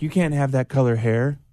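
plain

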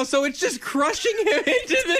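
high-pitched speech broken by laughter.

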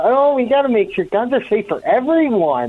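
play-acted, annoyingly peppy, bouncy, chirpy sing-song lilt. Mocking a district attorney's statement on a call: imitating a peppy, annoying tone. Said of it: "That whole peppy tone".

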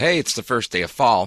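usual speaking voice

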